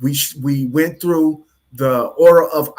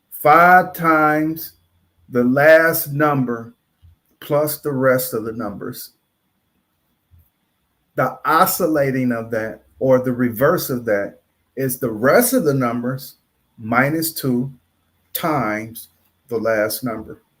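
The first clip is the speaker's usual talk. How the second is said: speaking slowly; 3 semitones lower than usual. Giving listeners a formula a second time, speaking slowly. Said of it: "I'm going to say it slow".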